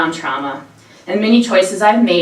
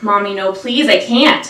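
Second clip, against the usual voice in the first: slow, pleading voice collapsing into sobs; 2 semitones higher than usual. Speaker recalls collapsing at the door and pleading with her mother, retelling own sobbing plea. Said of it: "I collapsed and sobbed".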